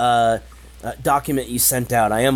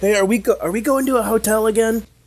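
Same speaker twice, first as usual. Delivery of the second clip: shouting, very high-pitched; 10 semitones higher than usual. Covering the phone and calling to people in a car: yelling. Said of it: "I yell to the people in".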